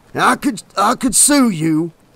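wheezing, wheezy words. Narrator reads an injured man's line after swigs of whiskey, wheezing. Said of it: "he wheezed".

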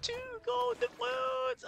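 very high voice that cracks. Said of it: "Oh, my voice is cracking".

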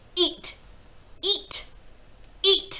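shrieking, shrill yell at full, very loud volume. Reading a story aloud, a character orders a boy to keep eating, yelling. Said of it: "The Trunchbull was yelling".

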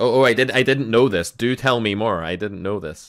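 loud, high-pitched, sarcastic mock surprise.

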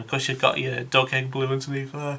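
speaking through a yawn. Describing a plane's camouflage scheme, the speaker keeps yawning: yawning while speaking. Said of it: "why am I yawning so much?".

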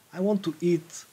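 plain

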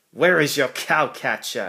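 sharp, curt tone. A policeman questions the engine that whistled behind him, asking sharply. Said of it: "asked the policeman sharply".

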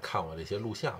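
ordinary talk

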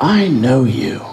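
put-on voice of an elderly woman. Retelling an old woman coming up to him downtown, quiet old woman voice. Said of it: "in that quiet old woman voice".

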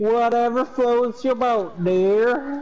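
silly put-on goofy voice. Teasing someone in a back-and-forth, the speaker does a goofy impersonation voice. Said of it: "That's my goofy impersonation".

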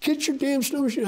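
mock very high, shrill, high-pitched yell. Retelling yelling at a man who stood still after a crash: imitating own past yelling. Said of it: "and I'm yelling at him".

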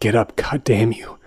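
seething, through gritted, clenched teeth. Nicholas answers the man who betrayed him; through gritted teeth, seething. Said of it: "I said through gritted teeth".

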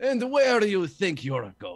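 put-on thick Russian accent. Game master voices a figure calling from behind to a departing character, Joster the Toe, thick Russian accent. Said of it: "in a thick Russian accent calling from behind".

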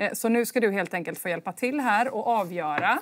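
ordinary delivery

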